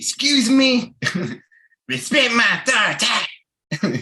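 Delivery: very high, slow, drawn-out cartoon voice. Imitating Sean as Cartman: Cartman voice. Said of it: "Think of Cartman".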